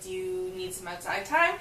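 ordinary talk, nothing marked

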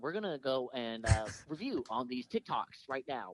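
very nasal pundit voice. Doing a requested impression for the others: Ben Shapiro impression. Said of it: "You got a Ben Shapiro?".

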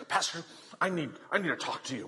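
put-on huffy, indignant woman's voice. Retelling a story of a woman confronting a pastor: imitating a huffy woman. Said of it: "a woman walks right up to him all huffy and puffy".

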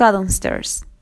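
ordinary delivery

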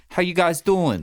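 put-on New Jersey accent. Describing the old man who sits up front at a restaurant, imitating his accent. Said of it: "Like with that accent".

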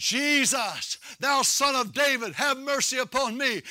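ordinary delivery

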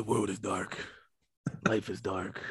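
slow, trailer-style narrator delivery. Speaking lines another speaker likens to Batman trailer narration voice. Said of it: "You sound like the narration of the new Batman trailer".

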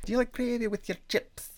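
flamboyant Scottish accent. Trying out an accent for the co-host, asking a question in a very camp Scottish accent. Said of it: "That was more like a very camp Scottish person".

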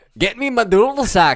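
loud, high, badly put-on Scottish accent. Joking about bagpipes in a put-on voice: bad Scottish accent. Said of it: "I can't do a good Scottish accent".

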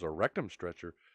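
stunned, baffled, dumbfounded, lost for words. Retelling a joke, voicing the cop repeating the driver's answer: imitating a dumbfounded question. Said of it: "with a dumbfounded look on his face".

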